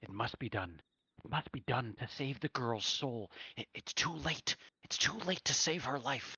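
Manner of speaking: hushed stage half-whisper. Narrator voicing Brother Grigori half-whispering to the mayor, in Grigori's low hushed half-whisper. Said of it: "in this very like low and hushed tone, whispering".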